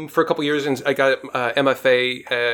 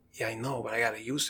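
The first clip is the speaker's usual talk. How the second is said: very quiet, hushed put-on tough-guy Brooklyn accent; 2 semitones lower, 13 dB quieter than usual. Retelling wannabe mafia guys who came into the restaurant, in a wannabe mafia brooklyn accent. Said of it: "this is where the Brooklyn accent comes in".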